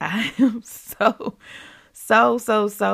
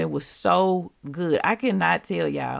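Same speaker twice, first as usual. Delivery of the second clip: ordinary delivery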